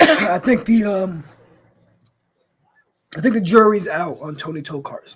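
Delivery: voice giving out, nearly gone. Livestreamer who's been talking fast all stream, voice giving out. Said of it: "My voice is leaving me".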